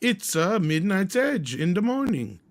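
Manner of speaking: botched character voice, very high, loud and swooping. Opening the show with a greeting: worst Mario voice. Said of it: "that's the worst Mario I've ever done".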